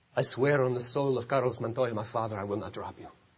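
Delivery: mock grave, solemn, low, deadly serious voice. Retelling a movie scene where a swordsman swears an oath: imitating a deadly serious oath. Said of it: "he becomes deadly serious".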